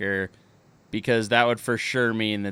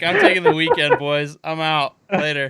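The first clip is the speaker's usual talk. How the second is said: checked-out, offhand delivery, pitched up; 6 semitones higher, 4 dB louder than usual. Joking about Goodell's last-day vibe, imitating Goodell, checked out. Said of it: "He's like".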